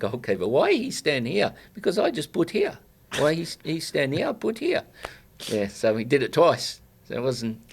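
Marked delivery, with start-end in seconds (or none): 0.5-4.8 put-on sing-song accent, choppy broken English. Retelling a teammate's words about free kicks: imitating Nebo's accent. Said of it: "I always used to do his accent".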